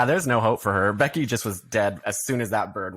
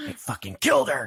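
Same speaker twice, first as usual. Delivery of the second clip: imitated very mad voice, pitched higher; 11 semitones higher than usual. Retelling a movie scene where a boyfriend gets in the car: imitating someone being so mad. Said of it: "he's so mad and he's like".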